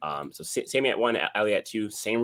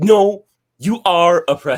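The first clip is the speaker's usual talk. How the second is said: play-acted booming, shrill, drawn-out, insistent yell; 10 semitones higher, 14 dB louder than usual. Retelling what a girl at school told the speaker: imitating someone insisting. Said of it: "She was telling me".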